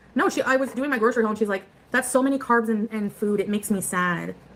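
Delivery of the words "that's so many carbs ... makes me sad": plain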